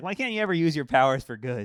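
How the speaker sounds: acted-out, shouted scolding yell. Speaker retells a woman yelling at them, retelling her yell. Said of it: "She even yelled at me like".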